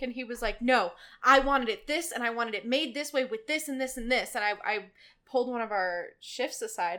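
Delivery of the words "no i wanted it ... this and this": loud, angry, irate shouting rant. Retelling a customer yelling about a drink: imitating a customer yelling. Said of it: "he starts yelling at me about it".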